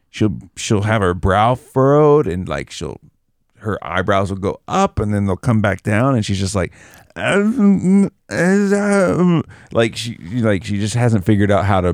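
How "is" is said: very high, stumbling, halting struggle to get sounds out. Imitating her while she thinks hard on how to make sounds: imitating a girl struggling to make sounds. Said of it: "you act like her so well".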